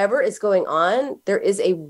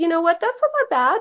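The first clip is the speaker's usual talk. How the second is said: very high, quick, nicely dismissive tone; 11 semitones higher than usual. Mother retelling what she told her crying child with a skinned knee, nicely dismissive. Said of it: "Totally nicely dismissive".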